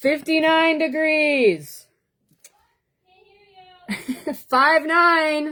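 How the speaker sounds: shouting. Calling out the temperature to someone in the shower: yelling. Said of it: "I'm so sorry for yelling right now".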